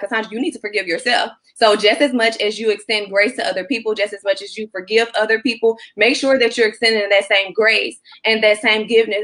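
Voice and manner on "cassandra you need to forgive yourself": imitated whisper. Retelling a message heard in a whisper: retelling a whisper. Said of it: "like whispering to me".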